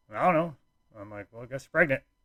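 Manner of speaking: casual, unbothered, offhand, nonchalant tone. Retelling own reply when she announced she was pregnant, replaying own nonchalant reply. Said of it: "I was just so nonchalant about it".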